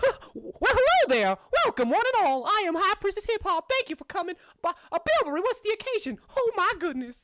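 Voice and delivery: very high, loud, squeaky cartoon voice. Voicing a gnome high priestess greeting visitors: Mickey Mouse-like voice. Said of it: "Is it just Mickey Mouse?".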